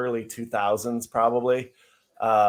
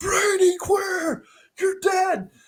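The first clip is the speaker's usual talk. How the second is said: screaming in a higher pitch; 3 dB louder than usual. Retelling a fan at a game who screamed at a player: imitating a fan screaming. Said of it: "this guy is screaming at the top of his lungs".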